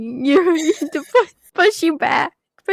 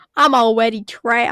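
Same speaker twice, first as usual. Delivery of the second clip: put-on upset New Jersey accent, lower; 4 semitones lower than usual. Imagining Barbie being so upset: Barbie in an upset Jersey accent. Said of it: "Barbie in a Jersey accent being so upset".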